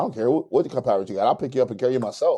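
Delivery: put-on authoritative dad voice. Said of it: "authoritative dad voice".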